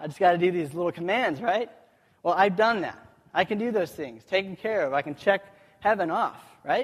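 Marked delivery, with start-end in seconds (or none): none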